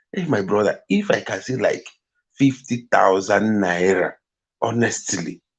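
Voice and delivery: ordinary talk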